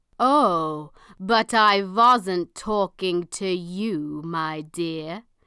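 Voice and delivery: menacing, threatening tone. Narrator reads a man's reply to Mum, menacing. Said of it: "he said menacingly".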